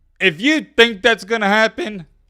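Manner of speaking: voice breaking up, very high. Mid-rant, the speaker's voice cracks: voice cracking. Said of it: "sorry, voice crack".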